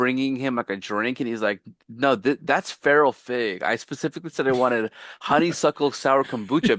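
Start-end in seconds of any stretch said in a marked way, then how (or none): none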